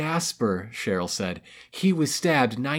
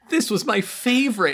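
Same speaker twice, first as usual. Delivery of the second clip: effusive, gushing enthusiasm, pitched up; 8 semitones higher, 3 dB louder than usual. Narrator reads a character holding up a porcelain figure; gushing. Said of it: "Cheryl gushed".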